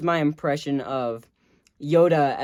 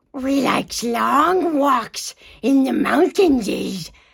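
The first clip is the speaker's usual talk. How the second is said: very high, loud, creature-like voice; 10 semitones higher, 6 dB louder than usual. Doing Gollum as a dating-show contestant, a Gollum impression. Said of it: "my impression of Gollum".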